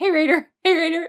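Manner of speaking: play-acted, very high, frenzied, frantic calling out. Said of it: "Joe just being an absolute spaz, going".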